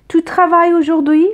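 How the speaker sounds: pitch rises on the last syllable. Teaching questions in informal french: rising pitch on final syllable. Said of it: "La voix monte. attention صدا بالا میره".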